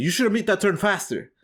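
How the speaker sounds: acted-out high, scolding, hollering yell. Retelling a driving test where an examiner yelled: imitating a lady yelling. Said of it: "this lady starts yelling at me".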